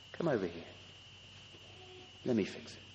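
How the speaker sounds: dropped to a soft, breathy, whispered hush. Speaking to a frightened child who has broken something; lowered voice. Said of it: "So then you lower your voice".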